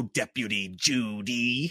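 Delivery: put-on over-the-top voice. Quoting how a character addresses someone, imitating his over-the-top voice. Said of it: "over the top with his voice".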